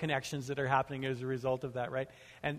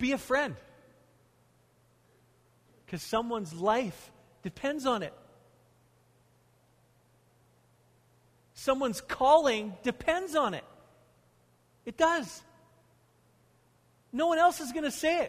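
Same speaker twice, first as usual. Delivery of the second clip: very high-pitched, impassioned, passionate shouting; 11 semitones higher, 5 dB louder than usual. A speaker addressing listeners, shouting passionately. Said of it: "I'm shouting now, not because I'm mad. I'm just passionate".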